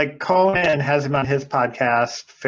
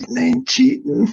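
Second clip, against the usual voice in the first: very high, creaky, rough voice pushed way up; 10 semitones higher than usual. Imitating another comedian's one-line impression: Bill Clinton voice. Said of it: "Scott Aukerman does a Bill Clinton where he's like".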